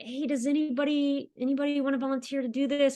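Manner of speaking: put-on half-hearted, reluctant, hesitant tone. Retelling asking a meeting for a volunteer: imitating own reluctant asking. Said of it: "reluctantly was like".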